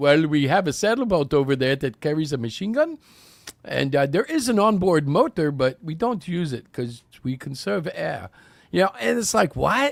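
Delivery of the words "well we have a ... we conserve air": fake Russian accent throughout. Acting out a nation answering where its navy is: put-on Russian accent. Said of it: "that was Russian".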